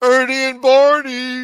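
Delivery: put-on dopey voice, very high and loud. Retelling how a guy names two people: imitating someone saying it dopey. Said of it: "I'm impersonating him".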